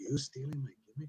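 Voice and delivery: confrontational, challenging delivery. Retelling being confronted in a locker room: imitating Jimmy Snuka. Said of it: "And he's like".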